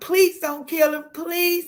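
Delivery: put-on frantic, desperate screaming, high. Retelling what his girlfriend screamed at the store owner; retelling a desperate scream. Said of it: "my girlfriend was screaming at the owner".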